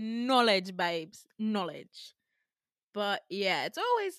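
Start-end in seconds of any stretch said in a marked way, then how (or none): 0.0-2.1 slipping into a put-on British accent. Retelling what a woman said, the speaker slips into a British accent. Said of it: "I became British".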